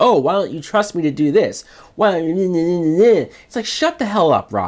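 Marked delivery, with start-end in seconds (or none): 0.0-3.3 acted whining voice. Mocking a character's complaining to Batman: imitating whiny Robin. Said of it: "He spends this whole movie whining".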